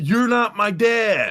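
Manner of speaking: mock scream, loud, high and drawn out. Retelling the moment Henry screams at the father figure: imitating Henry screaming. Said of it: "so Henry screams".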